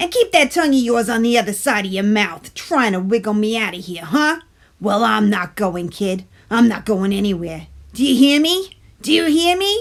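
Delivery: stubborn, defiant character voice. Reading a story aloud, voicing the tooth speaking to Stuart: talking tooth voice. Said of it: "said the tooth. / "And who do you think you're kidding, kid? Bring on those chocolate chips." / Bedtime Stories with [name]: "Sweet Tooth" (uploaded 2020)".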